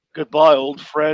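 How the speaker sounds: sincere, heroic voice, straight and meant, no camp. Retelling Batman looking in on Superman: Adam West voice. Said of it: "in that Adam West voice".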